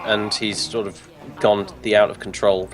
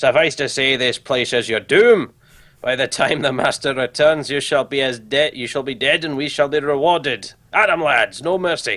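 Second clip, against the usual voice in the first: put-on Scottish accent; 4 semitones higher than usual. Game master voicing an NPC to the players: Scottish accent. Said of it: "I do apologise to anyone who's Scottish".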